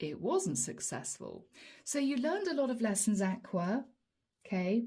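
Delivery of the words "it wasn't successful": quiet, low, soft voice. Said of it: "admit quietly to yourself".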